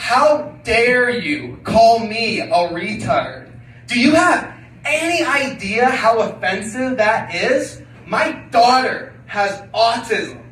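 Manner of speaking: slow, loud, drawn-out offended and indignant outrage.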